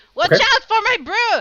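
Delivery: shrill, very high, very loud acted scream. Playing a character pulling a table from a fight: screaming in character.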